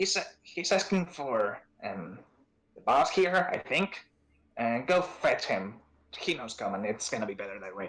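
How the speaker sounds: goblin voice speaking goblin-sounding tongue. Voicing a goblin sending another to fetch the boss: speaking Goblin. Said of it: "he looks at the other and says in Goblin".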